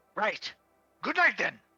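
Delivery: full-on loud, high-pitched yelling. In a role-played scene, a character hears footsteps go away, yelling. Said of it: "I'm sorry, I'm yelling".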